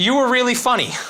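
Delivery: put-on screaming, calling out high like a little girl.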